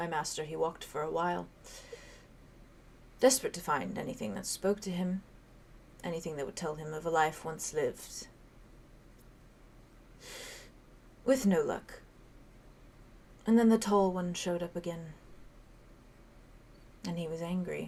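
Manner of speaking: very soft, hushed whisper. A magic skull tells the listeners about its master, in a very soft voice. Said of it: "He just very softly says".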